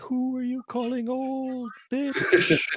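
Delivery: very high, eerie ghost voice. Narrating as a vanished ghost answers the players back: ghostly voice on the wind. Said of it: "you hear a ghostly voice on the wind say".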